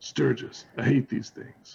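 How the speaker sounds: whispered line, whispering. Playing a character in a tabletop game, the player speaks the character's line whispering. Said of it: "I'm just whispering".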